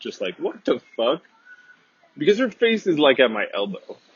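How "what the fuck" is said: sudden, stunned, shocked disbelief. Retelling own reaction after being shoved: imitating own shocked reaction. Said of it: "my jaw dropped".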